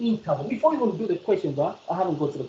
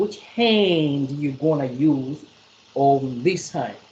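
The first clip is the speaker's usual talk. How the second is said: slow, deliberate, carefully paced delivery. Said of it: "let me say it again slowly".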